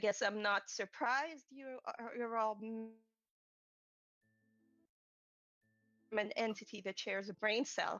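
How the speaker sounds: snooty, haughty, nasty and mean. Narrating a girl turning petty toward the Tinsleys and Axel, haughty and mean. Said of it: "in a very kind of haughty and very mean sort of way".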